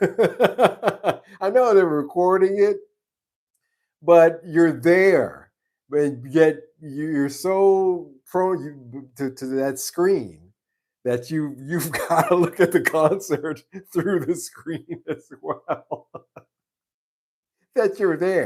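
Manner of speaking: high, loud, slow, incredulous laughing rant.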